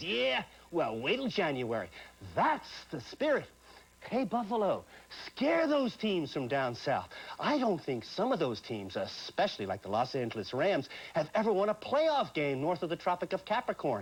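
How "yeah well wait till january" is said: mock growling, growling man voice. Quoting a man met at the Buffalo airport, retelling a growl. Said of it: "He growled".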